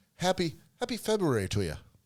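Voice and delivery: horrible fake Irish accent. Toasting the others with drinks: horrible Irish accent. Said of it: "This is a horrible Irish accent".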